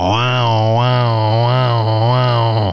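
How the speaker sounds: low, drawn-out electric grease gun noise. Performer showing off an impression he practiced as a youngster: electric grease gun impression. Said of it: "my impression of a electric grease gun".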